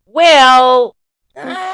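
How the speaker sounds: high squeaky voice. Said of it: "You got very squeaky".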